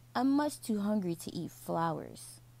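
ordinary delivery, nothing marked

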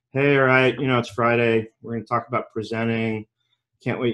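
low, flat, dull droning monotone, no life. Showing how a dull webinar opening would sound: flat monotone voice. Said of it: "just talked very monotone, like".

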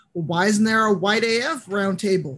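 normal talking voice

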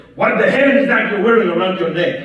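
huge, very loud, booming bellowing voice. Retelling what a man leaned forward and said, in a big booming voice. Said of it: "in the biggest booming voice".

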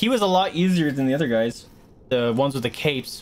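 ordinary talk, nothing marked

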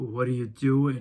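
put-on diabolical voice. Retelling what the agency owner said to them, in a diabolical voice. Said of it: "he had this diabolical voice".

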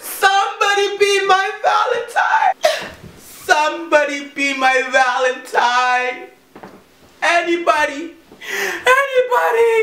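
fake sobbing. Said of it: "Stop crying".

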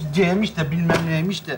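mumbling to self. Someone stuck on a multiple-choice question, muttering to themselves. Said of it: "(mırıldanır)".

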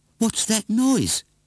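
very high, tiny little mouse-like squeak. Narrator reading a story, one of the mice hearing a noise, squeaking. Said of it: "He squeaked".

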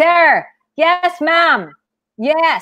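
very slow, deliberate, high-pitched shout. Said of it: "Please don't shout at it".

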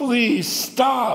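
crying out in a loud scream. Recalling being tied to a tree and beaten by father: reliving a scream of please stop. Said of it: "I'm just like screaming".

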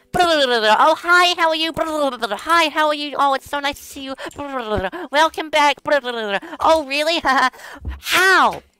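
very loud, high, nonstop hyper babble. Describing an energetic streamer, imitating a loud streamer. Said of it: "I realize I'm being very loud".

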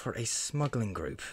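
guarded, discreet, confiding tone. A half-elf introducing himself to strangers at a table, speaking kind of quietly. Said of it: "he speaks kind of quietly".

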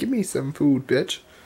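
put-on dog voice. Voicing the dog asking for food: voicing the dog. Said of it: "The dog's just like".

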